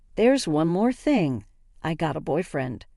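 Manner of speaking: plain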